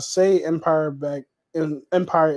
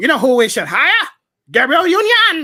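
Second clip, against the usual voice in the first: goofy sing-song silly voice, very high and loud; 11 semitones higher, 8 dB louder than usual. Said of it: "What the hell is that voice?".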